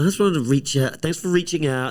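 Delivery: shrill, very high, very loud mocking parody voice. Speaker complaining about phrases guys use, mockingly imitating guys.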